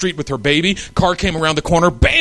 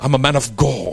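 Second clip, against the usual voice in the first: slow, drawn-out, put-on British accent, preacher-like; 2 semitones lower than usual. Playing a mighty man of god entering: put-on british accent. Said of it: "You got to say it with like a British accent. It sounds more anointed".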